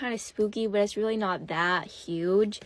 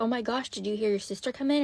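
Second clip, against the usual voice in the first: put-on freaked-out voice. Retelling a father's question, imitating someone freaked out. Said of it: "totally freaked out".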